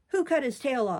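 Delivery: menacing, threatening, demanding tone. Reading a story aloud, the narrator voices Ben's demand in a menacing tone. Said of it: "demanded Ben in a menacing tone".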